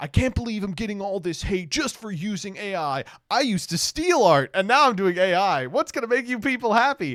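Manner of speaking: mock, high, upset ranting voice. Retelling a creator's week of complaints: imitating someone crashing out. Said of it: "spent a week crashing out being like".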